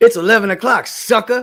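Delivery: very loud, high-pitched holler, belted out. Joking about a smart speaker that talks like Mister T: Mister T voice. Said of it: "one that sounded like Mister T".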